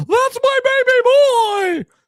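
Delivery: long, shrill yell, very high and very slow. Parent describing son's first night as bat boy, mock yelling from the dugout. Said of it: "see me on the dugout yelling".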